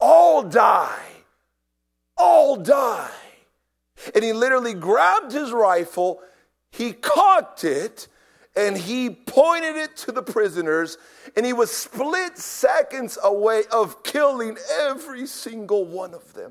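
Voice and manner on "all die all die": high, very loud, raging shout. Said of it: "the guard began to shout".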